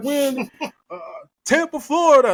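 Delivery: high-pitched, energetic, crowd-rousing announcer voice. Mocking a wrestler greeting the crowd: imitating Punk addressing the crowd. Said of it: "like, to the crowd and shit".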